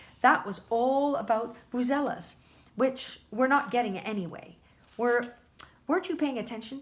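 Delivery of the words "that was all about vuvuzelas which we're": usual speaking voice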